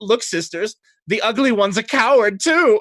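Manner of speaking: very high, shrill, giggling mocking tone. Voicing a woman at the mirror joking with her sisters: giggling mockery. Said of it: "she giggles and she goes".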